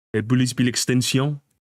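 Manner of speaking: fake, put-on French accent. Saying a silly phrase with a put-on French accent. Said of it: "with a French accent".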